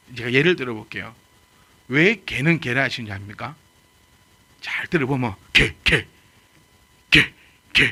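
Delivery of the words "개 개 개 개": loud, drawn-out barked gae, each bark spaced. Explaining where animal names come from, giving an example: imitating a dog barking. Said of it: "이렇게 짓어요".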